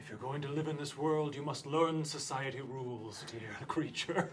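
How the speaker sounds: soft, hushing half-whisper. Holding a calmed creature in their arms, speaker addresses it: half-whispering. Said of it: "I'm whispering".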